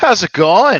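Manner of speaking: very high, very loud Canadian twang. Answering a greeting at the start of the episode: Canadian accent. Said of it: "I just had a nice Canadian accent there".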